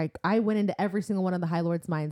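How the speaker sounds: ordinary talk, nothing marked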